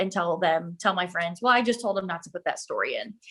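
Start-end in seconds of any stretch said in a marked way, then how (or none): 1.4-3.1 put-on, fast, swooping sarcastic delivery. An advertising worker retells answering people's newspaper questions, retelling own sarcastic remark. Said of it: "I typically am very sarcastic".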